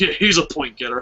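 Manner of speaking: sarcastic, ironic-sounding tone. Retelling own earlier remark about a wrestler: imitating own sarcastic tone. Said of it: "you still have the Roman Reigns sarcasm".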